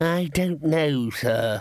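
tired, weary, very slow, drawn-out delivery. Replying to the man he calls sir, who has just asked a question: weary. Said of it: "said Ponder wearily".

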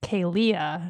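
Kalia, second syllable lia stressed. Explaining ways people pronounce the name Kalia, stress on second syllable of Kalia. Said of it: "like emphasis on the Leah".

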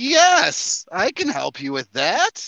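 thrilled, eager, very excited voice, high and swooping. Narrator voicing a character replying to a player, very excited character voice. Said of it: "And he seems very excited".

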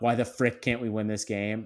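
ordinary talk

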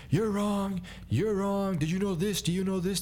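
high-pitched mock yelling back and forth.

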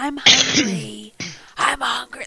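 put-on slow, forceful whisper-yell in toddler voice. Retelling a toddler waking a parent in the morning: imitating a toddler's whisper-yell. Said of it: "the toddler whisper".

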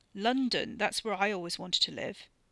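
ordinary delivery, nothing marked

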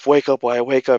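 mock screaming, yelling. Describing staring at the own lifeless body, replaying the inner voice; retelling screaming at himself. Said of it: "me just screaming at myself".

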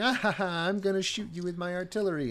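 put-on soft, cackling villain girl voice. Retelling a game scene where a girl commanding artillery taunts the team, mock cackling. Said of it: "she's cackling".

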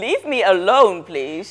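mock-irritated, acted annoyed tone. Retelling how someone kept talking to them, the speaker acts out their irritated reply. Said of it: "Ik zo fucking geïrriteerd".

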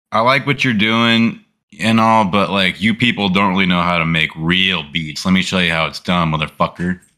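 ordinary delivery

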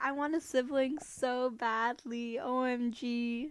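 slow, drawn-out sobbing, crying wail. Retelling wanting a sibling as a child: imitating own past crying. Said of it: "I remember crying 'cause I was like".

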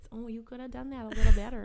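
put-on Minnesota accent. Describing a nagging inner voice, the speaker voices it in a Minnesota accent. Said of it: "and they have a Minnesota accent".

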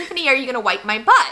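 ordinary talk, nothing marked

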